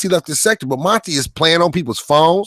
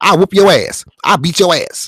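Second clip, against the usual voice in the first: feminine put-on voice, slower. Insisting that Cliff always sounded feminine, the speaker mimics him: feminine-sounding Cliff impression. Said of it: "He sounded like a woman".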